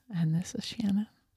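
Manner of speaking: very soft, whispered, calm radio voice. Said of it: "You know what you just sounded like?".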